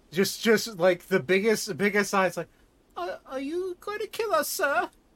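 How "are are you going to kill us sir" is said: put-on small child's piping little girl voice, very high. Voicing a halfling girl tugging a player's pants leg: little halfling girl voice. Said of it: "a little halfling girl staring up at you".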